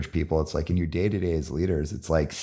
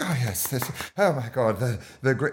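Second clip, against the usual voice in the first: put-on upper-class aristocratic accent, pitched up; 7 semitones higher than usual. Talking about work culture, imitating certain people in the room: aristocratic accent. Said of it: "I'm using my aristocratic tone there when I take on that accent".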